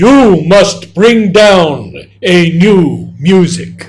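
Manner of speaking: huge, booming, very loud, drawn-out voice. Retelling what the mother said to them: imitating a huge voice. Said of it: "in this huge voice".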